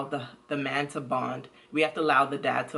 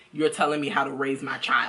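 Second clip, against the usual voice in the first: plain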